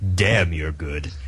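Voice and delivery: big, very deep voice dropped right down. Imagining what God says at the pearly gates: big deep voice as God. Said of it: "a big, deep voice going".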